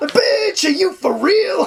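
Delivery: sudden leap way up into very high register. Retelling a movie scene with a co-host, doing a Rudy Ray Moore impression. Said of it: "It's like Rudy Ray Moore or something".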